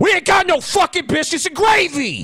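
shrill, very high yell. Retelling a drive-thru worker answering a repeated order: imitating a worker yelling. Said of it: "why do you yell at me like that".

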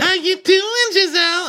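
loud, very high-pitched, shrill voice. Retelling Wendy greeting Giselle at the bar, imitating Wendy's high-pitched voice. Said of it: "She gets that really high-pitched voice again".

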